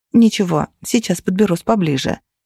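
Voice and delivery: ordinary talk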